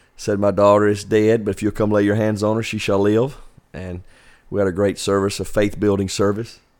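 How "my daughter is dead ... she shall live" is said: plain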